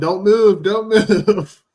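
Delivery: loud, slow, high, drawn-out, deliberate yell. Retelling the story of that night, yelling at him again: retelling a yell. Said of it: "I'm yelling at him".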